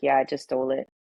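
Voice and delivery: put-on very calm, nonchalant tone. Speaker retelling a man answering her mom about a police car: retelling a calm, nonchalant reply. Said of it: "Like just real calm, real like nonchalant".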